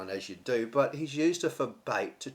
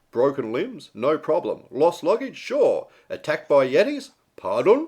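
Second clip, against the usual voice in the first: higher, louder radio announcer voice. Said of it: "I'll read in my best radio vo-, radio voice".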